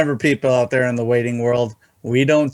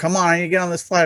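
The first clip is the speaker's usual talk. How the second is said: put-on barking sounds, higher pitch; 5 semitones higher than usual. Recounting travelers complaining at an airport check-in agent: mimicking people barking. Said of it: "just barking at her".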